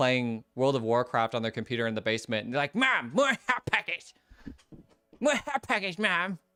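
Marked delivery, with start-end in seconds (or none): 2.7-6.4 put-on squeaky, very high cartoon boy voices. Retelling a cartoon scene of boys gaming in a basement: South Park boys voice. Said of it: "that South Park episode where, like, all the boys are".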